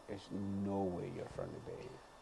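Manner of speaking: very quiet, hushed, disgusted disbelief. Retelling a lady's reply on hearing where the speaker is from: imitating a disgusted tone. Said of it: "with this disgust".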